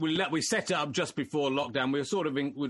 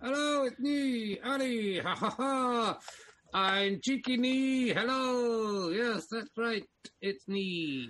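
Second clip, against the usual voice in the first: very high, squeaky ventriloquist dummy voice; 9 semitones higher than usual. Showing his ventriloquist dummy to the audience, speaking as Ali the dummy. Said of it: "ventriloquist dummy called Ali".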